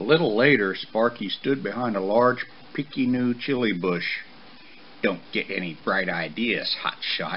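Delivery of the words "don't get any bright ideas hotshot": mocking, mumbled voice. A son hiding behind a bush mocks his father: mumbled, mocking his father. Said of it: "he mumbled, mocking his father".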